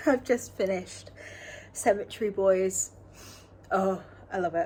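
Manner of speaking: choked-up, teary, crying voice. A reader tells viewers about a book just finished; crying. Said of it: "And yes, I am crying".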